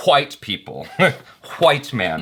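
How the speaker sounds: irritated, every word over-enunciated. Quoting an actor's line from an upcoming movie, mock-annoyed and over-enunciated. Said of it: "over enunciating because... you're just annoyed".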